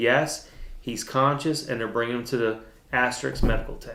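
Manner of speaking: ordinary delivery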